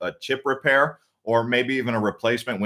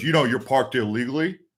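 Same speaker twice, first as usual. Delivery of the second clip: rough, aggressive delivery. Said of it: "so rude and aggressive".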